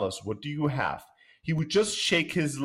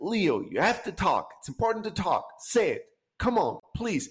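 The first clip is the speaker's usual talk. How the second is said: desperate, high, pleading, coaxing voice; 5 semitones higher than usual. Retelling how the parents spoke to their son, imitating pleading.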